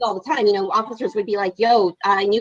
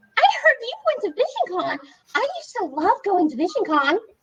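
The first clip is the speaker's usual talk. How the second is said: very high, sing-song, put-on innocent voice; 12 semitones higher than usual. Retelling what an inmate said at the desk, imitating her high innocent voice. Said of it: "High pitched voice, like it's so innocent".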